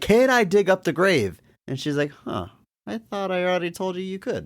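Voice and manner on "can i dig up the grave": fed-up, exasperated, high, frustrated screaming. Recounting a scene, the speaker acts out the frustrated man imitating a frustrated scream. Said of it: "he's so frustrated that he's screaming".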